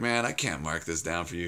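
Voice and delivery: plain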